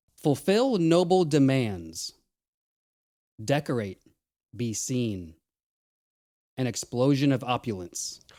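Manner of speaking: slow, deliberate, drawn-out delivery. Reading a clue to listeners and the hosts, speaking slowly. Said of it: "I'll say it slowly".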